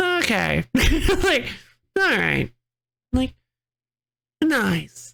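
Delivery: mock deflated, underwhelmed, swooping announcer voice. Retelling the announcer after a bad landing: imitating a disappointed announcer. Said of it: "you can just feel his disappointment".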